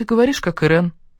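plain

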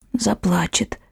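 whispering. Ivga repeats a man's question back to him, in a whisper. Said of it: "повторила Ивга шепотом".

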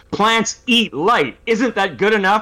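very high, loud shouted outburst. Retelling an interview answer about plants: imitating someone shouting. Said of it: "he just kind of shouts into the microphone".

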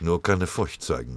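ordinary delivery, nothing marked

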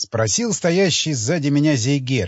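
plain

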